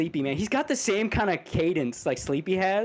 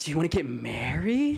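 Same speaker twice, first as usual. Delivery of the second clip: put-on, insincere, joking-sounding delivery; 4 semitones lower than usual. Imitating a friend proposing: imitating an insincere-sounding voice. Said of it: "he didn't sound like that".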